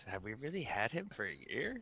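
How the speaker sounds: very quiet, swooping mutter under the breath. Teasing the ship's computer in character, muttering under breath. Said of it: "I'm gonna mutter under my breath".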